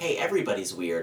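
ordinary talk

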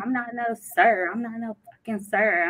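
put-on angry, cussing outburst. Retelling a caller at a call center who was cussing her out: imitating someone cussing her out. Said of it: "he cussed me out".

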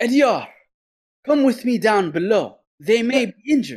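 very high, acted-out shouted yell. Narrating a game, the speaker acts out Yaito calling across the bridge: acting out Yaito's yell. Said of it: "He yells over across the bridge at Ediar".

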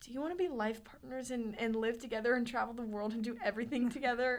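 quavering, unsteady, shaking, trembling voice. Retelling a friend's sudden question about being life partners: imitating a shaking voice. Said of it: "her voice is shaking".

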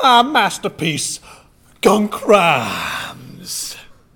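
drawn out, swooping upward, loud. Announcing a robot creation over a loudspeaker: like the Wild Wild West villain. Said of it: "He sounds just like the villain from Wild Wild West".

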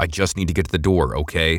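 plain

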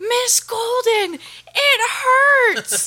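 slow, very high, drawn-out screaming cry, acted out. Retelling how a student lay on the floor, imitating a student screaming. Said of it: "screaming at me".

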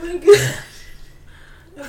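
slow, loud laughing fit.

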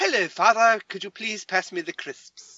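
affected, effete European manner, high and loud. Speaker demonstrates a stereotype while discussing pronunciation: effete European stereotype. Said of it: "it's the very effete European stereotype".

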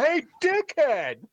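high, slow, drawn-out yell. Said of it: "I was gonna yell".

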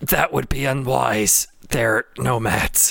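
acted speech broken by coughing. In a tense standoff, Zemlin answers the others, coughing up blood. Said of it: "coughs like a little blood".

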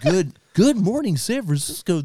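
smooth, sweet, high radio DJ voice. Joking about how a man would sound on the radio, sweet radio voice. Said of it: "a sweet voice for radio".

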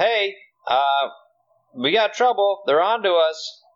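loud, alarmed shouted yell. A player's character tries to yell a warning to people in a trailer: yelling. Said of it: "just try and yell".

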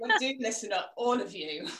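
ordinary talk

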